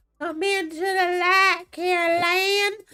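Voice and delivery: thick, heavy, high-pitched Southern drawl, slow. Retelling a line found both scary and funny: hardcore southern accent. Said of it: "the hardcore Southern accent".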